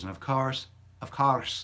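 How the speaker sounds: sudden Irish accent. Talking about his Instagram stories, suddenly slipping into an Irish accent. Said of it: "I don't know why I said it with an Irish accent".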